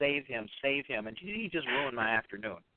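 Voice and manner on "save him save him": normal talking voice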